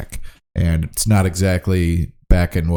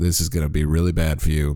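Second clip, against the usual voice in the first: put-on dry deadpan, quiet, flat and level; 3 semitones lower, 5 dB quieter than usual. Retelling how a man answered a remark about his fanny pack, retelling a deadpan reply. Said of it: "really deadpan".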